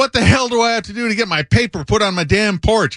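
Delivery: put-on angry ranting voice. Prank-calling an editor from the loading dock, imitating an angry subscriber. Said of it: "pretend I was an angry subscriber".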